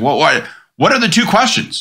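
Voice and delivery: put-on testy, annoyed tone. Retelling how he reacted to the list of topics, imitating him getting pissed off. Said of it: "he starts getting all pissed off".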